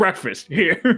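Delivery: high, commanding, mock bossy call. Voicing a character calling the others over to breakfast: commanding, like an order. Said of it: "more like an order".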